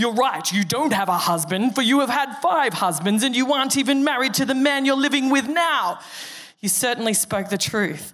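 pointed, accusing, accusatory put-on narrator voice. Explaining a Bible passage, the speaker tries the Bible app narrator impression. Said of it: "I'll try to do the dude from the Bible app".

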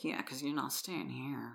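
mutter. Retelling a woman's reply to a man, retelling a mutter. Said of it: "she kind of mutters like".

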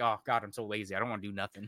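normal talking voice

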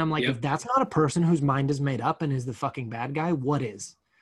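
normal talking voice

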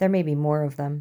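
plain reading voice

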